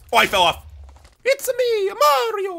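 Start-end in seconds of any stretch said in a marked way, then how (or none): 1.2-2.6 squeaky, very high-pitched cartoon plumber voice. Playing a game with another person right after you fell off, do a Mario impression. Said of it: "Are you doing an impression of Mario?".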